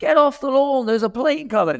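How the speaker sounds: put-on urgent, high, screamed shout. Retelling someone's warning to get off the lawn: imitating someone screaming a warning. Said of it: "shouting and screaming at the top of their voices".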